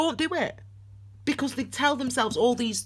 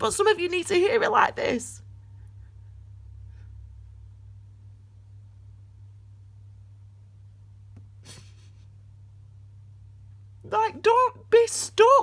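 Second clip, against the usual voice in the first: tearful, crying voice, higher pitch; 9 semitones higher than usual. Urging listeners not to stay stuck: crying while talking. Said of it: "I don't know why I'm crying".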